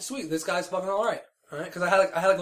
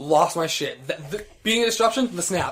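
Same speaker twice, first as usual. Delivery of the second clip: ordinary talk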